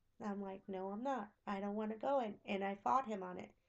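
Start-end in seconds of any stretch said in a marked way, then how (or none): 0.7-2.4 put-on tearful crying voice, quieter. Retelling refusing to go in the water: imitating own crying refusal. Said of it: "And I started to cry".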